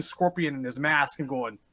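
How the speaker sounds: ordinary talk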